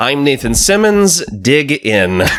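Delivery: put-on stilted radio announcer voice. Podcast host introduces himself at the start of a skit, stilted radio announcer voice. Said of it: "we both have like very stilted radio announcer voices".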